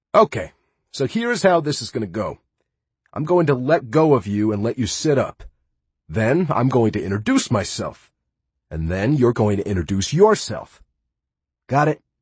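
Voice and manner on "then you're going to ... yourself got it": ordinary delivery, nothing marked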